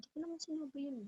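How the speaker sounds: very quiet, hushed, gentle, calm apologetic tone. Speaker demonstrates the second, calmer delivery of a line, calm and apologetic. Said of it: "you're apologetic as well with that kind of voice".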